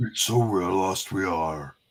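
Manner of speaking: low, eerie, ghostly spirit voice. Voicing a group of ghosts together with a partner, in a ghost voice. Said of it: "Those are our ghost voices".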